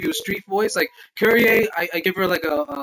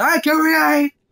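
put-on anime-style voice, higher; 9 semitones higher, 4 dB louder than usual. Voicing a greeting addressed to the speaker, in a Dragon Ball Z character voice. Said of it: "I don't know why I made him sound like a Dragon Ball Z character".

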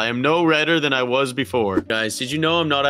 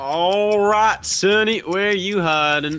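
put-on assumed southern accent, disguised voice, pitched up; 7 semitones higher than usual. Disguised in a game, calling out for a hiding player in a southern accent. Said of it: "Why are you doing a southern accent?".

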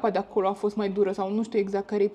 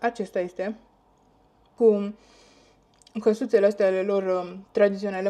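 talking with mouth full, slower. Showing everyone a magnet bought in Portugal, talking with mouth full. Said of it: "mă scuzați că vorbesc cu gura plină".

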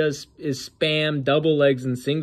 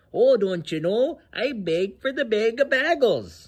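high-pitched put-on Minnesota local accent; 7 semitones higher than usual. Mocking a fighter begging on stage: mock Minnesota accent. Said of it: "That's probably how he talks".

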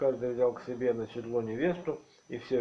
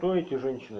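plain reading voice

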